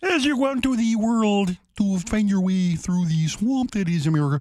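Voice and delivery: put-on frog puppet voice. Showing how to lean into the voice: Kermit the Frog voice. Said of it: "start to do Kermit the Frog".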